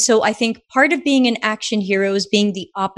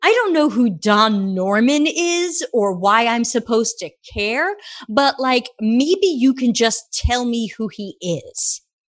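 slow, put-on New York accent. Retelling a written reply from a researcher, imitating someone in a new york accent. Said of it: "as soon as I take my character into the New York voice".

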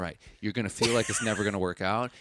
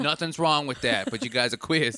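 put-on accent that sounds Boston; 3 semitones higher, 3 dB louder than usual. Imitating someone from a small-town high school: Boston accent. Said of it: "was that a Boston accent?".

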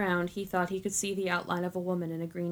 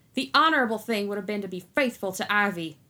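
loud, growling, ready-to-fight combative voice; 2 semitones higher, 6 dB louder than usual. Narrator reads Isaac answering the man who left Ivy, growled. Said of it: "Isaac growled".

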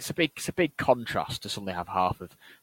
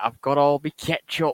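put-on little Yorkshire lad accent, louder; 6 semitones higher, 6 dB louder than usual. Riffing on a team's budget, voicing a little Yorkshire lad. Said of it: "Just some little Yorkshire lad".

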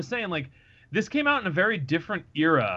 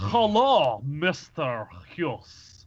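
very awkward, put-on Russian accent. Recalling a spy character from Crystal Skull: imitating Cate Blanchett's awkward Russian accent. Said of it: "very awkward Russian accent".

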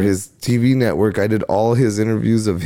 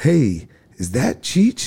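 laid-back, swooping, cool, mellow voice; 3 semitones higher than usual. Retelling a night signing autographs, imitating cool mellow talk. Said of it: "All cool and mellow like that?".

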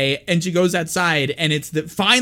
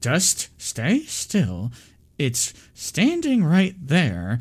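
mock quiet, hushed speech through clenched teeth; 2 semitones lower, 4 dB quieter than usual. Retelling a film scene where a character answers Sadie: imitating speaking through teeth. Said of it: "She's like speaking through her teeth".

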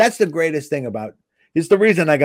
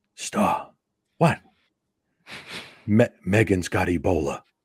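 put-on whisper, quieter and lower in pitch; 5 semitones lower, 5 dB quieter than usual. Speaker retells Chris phoning about his girlfriend, imitating Chris whispering. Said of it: "And he's whispering".

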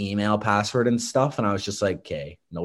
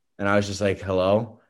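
normal talking voice

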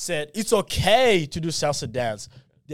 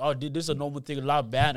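ordinary talk, nothing marked

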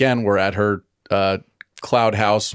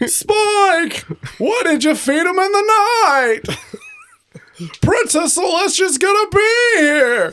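lousy, very high comic voice; 3 dB louder than usual. After someone says it sounds like him, scold Spike in a terrible Seinfeld impression. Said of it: "my terrible Seinfeld impression".

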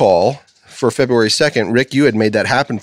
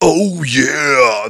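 mascot-style voice, long stretched-out yeah; 3 semitones higher than usual. Retelling a friend's Halloween costume catchphrase: imitating a friend as Kool-Aid Man. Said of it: "And he'd be like".

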